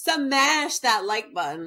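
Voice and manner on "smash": put-on voice, heavy emphatic stress on 'smash'. Mocking a woman who always said it this way, imitating her emphatic 'smash'. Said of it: "That's how she said smash".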